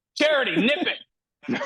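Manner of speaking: very high, shrill shout. Telling someone to stop what they're doing, yelling. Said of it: "I didn't mean to yell".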